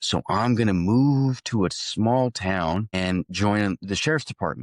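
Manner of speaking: normal talking voice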